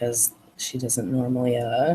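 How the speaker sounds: plain reading voice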